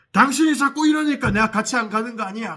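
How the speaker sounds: sudden yell, high and loud.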